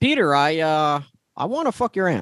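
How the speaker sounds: slow, halting, botched hero voice. Doing a Tony Stark voice that comes out like Obama. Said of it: "I don't know why I sound like Obama there".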